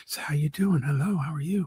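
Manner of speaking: quiet, hushed, soft whisper. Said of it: "she's whispering because it's before the show".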